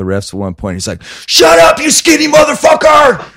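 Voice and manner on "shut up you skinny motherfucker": acted very high, loud yell. Retelling what a fan in the crowd shouted: imitating a fan yelling loudly. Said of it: "As loud as he could".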